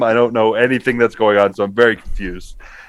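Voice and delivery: normal talking voice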